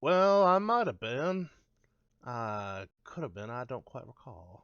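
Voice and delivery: put-on Deep South belle accent. Acting out a witness answering a lawyer's question, in a Southern belle voice. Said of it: "made you a Southern Belle".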